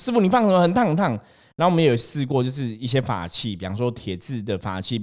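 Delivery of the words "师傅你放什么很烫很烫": shrieking cry, pitched way up. Retelling how someone screamed when a jade pendant touched their hand, retelling a scream. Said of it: "他就会尖叫说很烫很烫".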